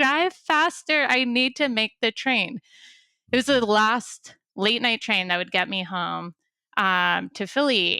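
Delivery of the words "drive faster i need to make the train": mild half-yell, pitched up. Retelling rushing to make the last train home, retelling a yell at the cab driver. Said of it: "And I'm like yelling".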